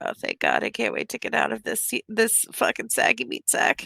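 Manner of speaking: hushed, acted whisper. Whispering in character to a sister in a secret language: whispering in character. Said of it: "I'm just gonna whisper in Zimnian to me".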